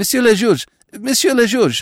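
very high, halting, stammering cry. An attendant bursts in to interrupt the magistrate, stammering. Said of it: "stammered the attendant".

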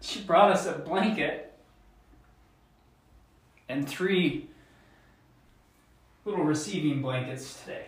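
soft voice, moved and growing emotional. Praising the woman who cleans their house, getting emotional. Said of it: "I'm getting emotional".

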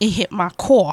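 Brooklyn accent showing through. Telling how a passenger's cigarette was aimed at the car: Brooklyn accent coming out. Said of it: "You hear, you hear the accent?".

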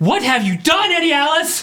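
very high, booming, hall-filling shout. A character, pushed back after a hug, cries out in a resounding shout. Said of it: "it resounds throughout the whole hall".

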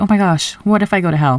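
terrified, scared-stiff outburst. Retelling a past fear of going to hell: imitating own terrified past self. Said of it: "I was terrified of being like".

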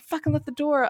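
play-acted, furious, pissed-off angry tone. Retelling scolding about the open door, imitating own anger. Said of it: "And I was pissed".

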